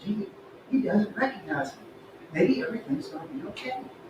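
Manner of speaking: very quiet, hushed mumble under the breath. A clerk facing a returning customer, mumbling to himself. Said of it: "What are you mumbling about".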